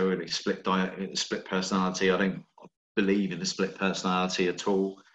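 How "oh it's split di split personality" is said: plain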